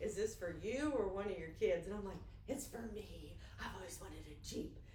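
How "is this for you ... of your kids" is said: put-on drawling Southern accent. Retelling what a man said to her while she looked at a Jeep, in a Southern drawl. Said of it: "in his best Southern drawl".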